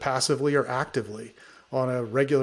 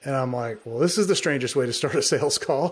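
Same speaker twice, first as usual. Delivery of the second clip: ordinary talk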